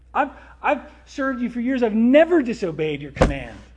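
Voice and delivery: loud, high, indignant, aggrieved tone.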